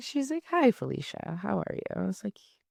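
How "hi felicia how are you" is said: calm, comforting, soothing, gentle voice. Retelling a phone call about test results: imitating a soothing voice. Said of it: "she's so soothing".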